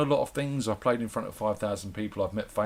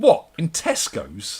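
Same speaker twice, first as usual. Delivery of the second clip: put-on high, slow, piping small child's voice. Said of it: "a little voice comes from the back".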